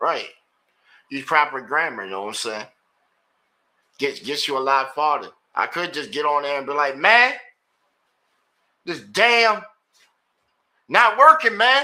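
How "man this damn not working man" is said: put-on shrill berating, very loud, high and drawn-out. The speaker acts out how they could berate the person: mock berating. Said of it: "Just sit there and berate the person".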